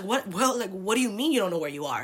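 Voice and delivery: play-acted, alarmed, freaked-out, panicked voice. Recounting calling a friend while lost in the city, imitating a friend freaking out. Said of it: "she freaks out because she's like".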